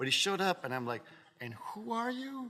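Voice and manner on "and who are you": mock delivery, very high-pitched, stretched out and slow. Retelling meeting a surprise guest before a show: imitating own past question. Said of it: "did you say it like that?".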